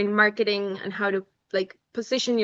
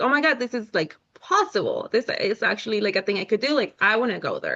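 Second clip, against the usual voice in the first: put-on excited dawning realization, swooping pitch. Retelling hearing a talk about art majors: retelling own excitement. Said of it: "And I was so excited".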